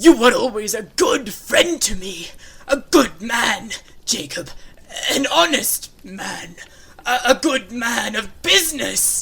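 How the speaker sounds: very loud, frightened stammering. Scrooge answers the ghost of his old partner with frightened stammering. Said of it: "[name]. / said [name], / I, I, I do," replied [name], dropping to his knees and covering his face".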